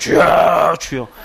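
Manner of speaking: creaky, rough, low, ground-down preacher voice. Recalling copying a pastor while at seminary: rough put-on preacher voice. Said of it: "목소리도 갈아봤어요".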